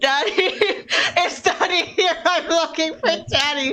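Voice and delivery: put-on, high, loud shouted call-out. Retelling calling out a customer's order when his food was ready; retelling a yell. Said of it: "I yelled out his order".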